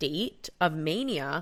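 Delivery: plain reading voice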